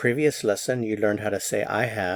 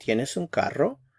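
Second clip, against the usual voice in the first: question-like rising lift on final carro; 4 semitones higher than usual. Spanish lesson on asking a yes-no question: pitch rising at the end on carro. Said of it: "the intonation rises a little bit towards the end".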